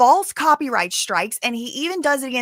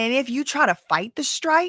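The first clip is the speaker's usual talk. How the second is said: ordinary talk, nothing marked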